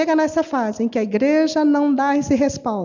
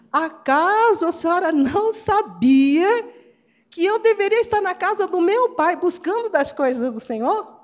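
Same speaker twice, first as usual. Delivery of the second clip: acted-out cheeky, ironic, jokey teenage voice; 4 semitones higher than usual. Retelling young Jesus answering his mother; mock-ironic retort. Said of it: "Ele usa de uma senhora ironia".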